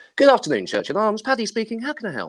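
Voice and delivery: very high, sing-song phone-answering voice. Speaker shows how they answer the phone working at their local, phone-answering voice. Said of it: "That's how I sound".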